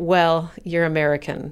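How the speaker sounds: put-on disappointed sighing. Retelling a woman's reply to people anxiously putting on ties, imitating a disappointed sigh. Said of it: "sighed in a disappointed manner and said".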